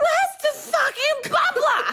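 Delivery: put-on, very high-pitched, shrill hollering voice. Retelling a story about a kid who yells at the clinic: imitating someone yelling. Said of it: "and then she yells".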